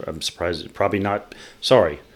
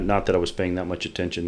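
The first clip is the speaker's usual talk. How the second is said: ordinary talk, nothing marked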